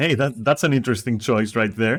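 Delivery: ordinary delivery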